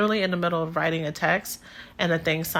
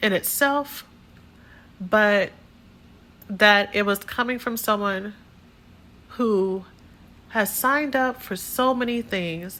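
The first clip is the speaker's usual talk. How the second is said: choked up, fighting back tears; 5 semitones higher than usual. Telling listeners about a hurtful message from a community member, holding back tears. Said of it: "I had to pause to catch myself".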